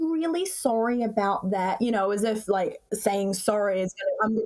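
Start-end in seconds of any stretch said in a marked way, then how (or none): 0.0-2.1 entitled, demanding, complaining tone. Quoting the mother of the son who assaulted her, in a mimicked Karen tone. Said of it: "with the most Karen tone".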